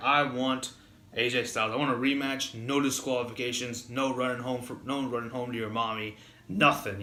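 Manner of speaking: ordinary talk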